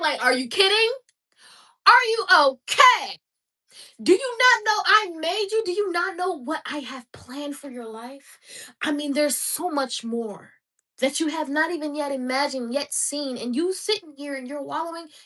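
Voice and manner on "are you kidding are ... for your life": loud, high-pitched screaming. Urging listeners not to wallow, the speaker voices God, imitating God screaming. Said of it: "God screaming from the back".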